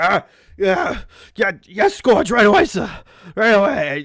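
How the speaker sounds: loud, groggy, dazed, stumbling stammer. Voicing a crew member just backhanded by the captain: Croup, dazed after being hit. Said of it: "Croup is like ... his head is, like, clearly ringing".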